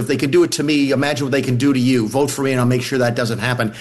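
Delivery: ordinary delivery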